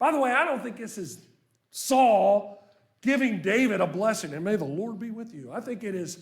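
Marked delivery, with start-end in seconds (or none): 4.3-5.5 put-on sarcastic voice. Rereading Saul's line to David the way it was meant: imitating Saul's sarcasm. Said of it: "it's sarcasm".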